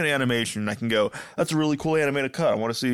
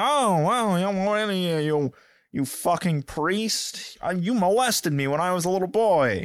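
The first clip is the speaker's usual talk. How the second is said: put-on nasal voice at much higher pitch; 6 semitones higher than usual. Discussing Patches' voice acting, one speaker demonstrates it: nasally Patches voice. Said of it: "It's very, like, nasally".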